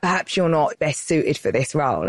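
plain

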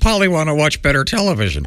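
high-pitched talking parrot voice. Joking about what someone's pet parrot would say, in a parrot voice. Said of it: "If Ace had a parrot, it would go".

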